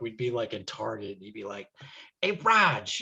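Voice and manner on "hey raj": sudden put-on Boston accent, pitched up. Reminding a friend how he'd joke at random in Target, Boston accent. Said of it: "pull out the Boston accent just randomly".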